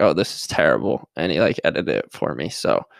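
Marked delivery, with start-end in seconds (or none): none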